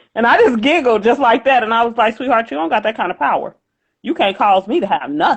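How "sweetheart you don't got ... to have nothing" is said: firm, authoritative tone, voice shifted. Retelling own reply to her: retelling speaking with authority. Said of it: "'cause the tone of my voice changed".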